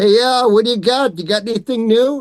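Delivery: put-on New York accent. Retelling what people at a table would say: imitated new york accent. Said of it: "now I'm going to imitate a New York accent".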